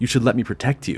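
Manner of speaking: ordinary talk, nothing marked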